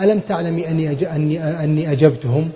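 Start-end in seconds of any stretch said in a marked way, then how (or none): none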